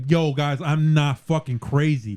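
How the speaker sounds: ordinary delivery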